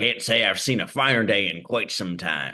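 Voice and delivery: put-on pirate puppet voice. Voicing a pirate puppet greeting a shipmate: pirate voice. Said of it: "Pirate puppetry".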